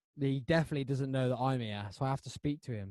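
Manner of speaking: plain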